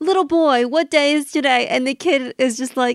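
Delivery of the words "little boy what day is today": acted call from afar. Retelling how Scrooge wakes and yells out the window: Scrooge yelling out the window. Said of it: "he always yells out the window".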